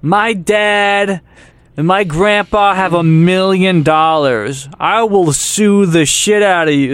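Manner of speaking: put-on drunken ranting yell. Retelling how a drunk passenger yelled at people: imitating a drunk frat bro yelling. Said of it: "started, like, yelling at people".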